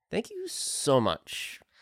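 toned down but still overkeen. Redoing the outro line after being asked to tone it down: toned down but still too eager. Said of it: "Off the gas just a little bit".

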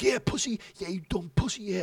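play-acted very high, screamed, taunting tone. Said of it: "he's screaming at me".

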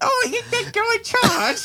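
very high, plummy, posh royal British mock voice. Mocking another speaker by repeating his line, mocking imitation of him. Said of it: "You sound like fucking Queen Elizabeth".

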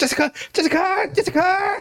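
very high, repeated calling out. Speaker does the series villain calling Jessica back, villain calling out impression. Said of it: "He's like".

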